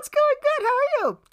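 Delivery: put-on very high, loud girl voice. Retelling a text exchange, doing the other person's voice for her replies. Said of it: "and this is her voice".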